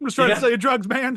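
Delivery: frightened, loud high-pitched cry. Quoting a man who was just trying to sell drugs: imitating a scared drug seller. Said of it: "he's so scared".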